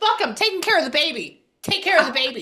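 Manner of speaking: fed-up, mad, swooping angry outburst. Retelling what he goes when the baby comes: imitating someone mad. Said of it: "mad at this".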